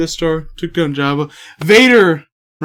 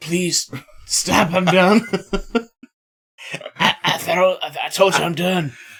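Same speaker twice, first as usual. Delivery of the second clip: put-on pleading voice, quieter; 5 dB quieter than usual. Imitating David Carradine being choked by Vader: imitating David Carradine. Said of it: "David Carradine's like".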